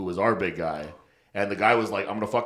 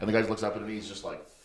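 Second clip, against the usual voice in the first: normal talking voice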